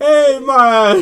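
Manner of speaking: put-on Jamaican accent. Retelling a prank call about a bomb in a building: put-on Jamaican accent. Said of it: "Like, the only Jamaican here".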